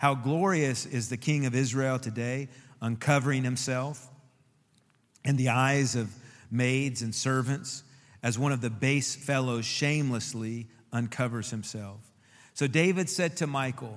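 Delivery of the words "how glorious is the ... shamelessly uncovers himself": ordinary talk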